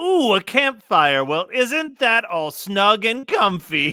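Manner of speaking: villainous stage magician character voice. In a story play, the evil magician comes upon a campfire: evil magician character voice. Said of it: "we evil magicians have to make a living too. / and old [name] was soon far outdistanced. / and old [name] was soon far outdistanced. / Now I've got you, and the minute you melt, that hat will be mine".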